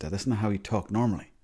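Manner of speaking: usual speaking voice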